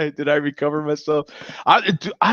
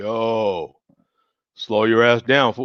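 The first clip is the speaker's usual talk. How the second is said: low, heavy, deep voice with "yo" stretched long; 5 semitones lower than usual. Describing a strong drink as if it talks to the drinker: deep voice. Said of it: "This one's got like a deep voice".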